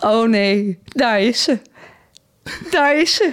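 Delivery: acted, high, drawn-out, half-hysterical tearful crying. Quoting a mother who sees the speaker arriving in the garden: imitating a mother crying hysterically. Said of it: "die gaat huilen en helemaal, die wordt half hysterisch".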